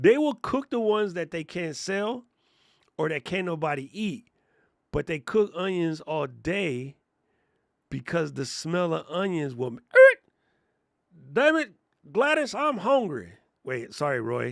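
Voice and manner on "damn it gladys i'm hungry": horrible, fake, high-pitched Southern accent. Speaker imagines someone smelling onions cooking all day: horrible southern accent. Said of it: "That was a horrible Southern accent".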